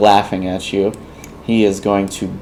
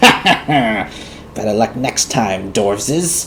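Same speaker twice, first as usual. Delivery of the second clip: sly, mocking goblin voice with taunting laugh. Game master voicing a goblin who dodged a dwarf's warhammer, as a taunting goblin. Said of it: "Ah, but the goblin is a tricksy bunch. He deftly maneuvers himself out of your warhammer and smiles at you with his crooked smile and says, / He deftly maneuvers himself out of your warhammer and smil".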